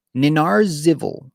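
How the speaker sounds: sounded out slowly and carefully, falling pitch.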